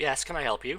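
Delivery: hushed, silky, very quiet, surprisingly pleasant voice. Narrator reading a curator's greeting to the player, smooth, pleasant voice. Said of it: "in a smooth and uh, surprisingly pleasant voice".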